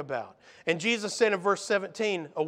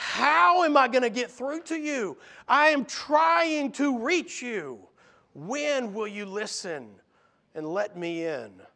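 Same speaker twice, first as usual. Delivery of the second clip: acted, fed-up, exasperated delivery. Voicing Jesus pleading with disciples who do not understand: exasperated Jesus voice. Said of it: "You can hear there's some exasperation".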